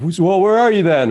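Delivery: mock, very high, furious shouted yell. Retelling how an angry driver came out: imitating someone yelling.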